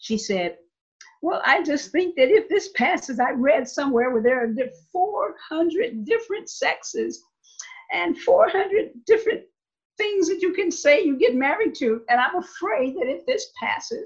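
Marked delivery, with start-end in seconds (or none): 1.2-14.1 high, deadpan, mock-earnest voice. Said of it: "she said with a straight face".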